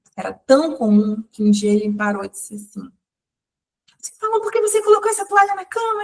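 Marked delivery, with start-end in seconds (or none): 4.0-6.1 shrill, very high, yelled, shouting-style speech. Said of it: "a gente falar gritando".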